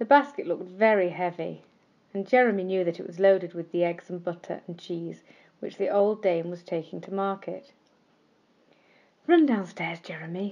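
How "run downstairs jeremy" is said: soft, kind whisper. A kind little voice inside Jeremy urges him, kind whisper. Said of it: "whispered a kind little voice inside him".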